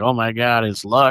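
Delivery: normal talking voice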